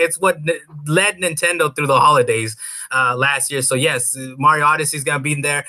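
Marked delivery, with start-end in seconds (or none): none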